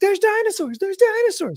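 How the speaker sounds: put-on very high shriek, blurted out. Retelling a meme where a guy on the beach screams: imitating someone screaming. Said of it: "He's just screaming it out".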